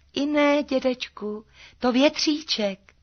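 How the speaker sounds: tiny, thin, very high piping voice. Narrating Maruška answering the old man, in a thin little voice. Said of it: "Tenkým hláskem odpověděla Maruška".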